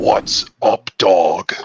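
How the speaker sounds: fierce, fully fierce voice. A player shows how he'll greet someone once fully Kranos, fierce Garral voice. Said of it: "fierce Garral voice possible".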